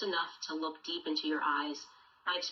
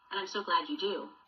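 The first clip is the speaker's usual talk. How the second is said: plain reading voice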